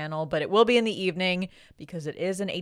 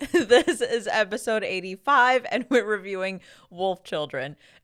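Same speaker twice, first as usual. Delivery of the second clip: laughing uncontrollably through words; 4 semitones higher, 4 dB louder than usual. Podcast host introducing the episode mid-laugh; can't stop laughing. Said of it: "I'm in the middle of laughing".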